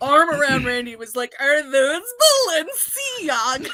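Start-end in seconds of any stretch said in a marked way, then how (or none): 1.4-3.7 mock drunken voice, higher and louder. Retelling asking a friend about his shoes: imitating own drunken question. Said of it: "Like, in that exact voice".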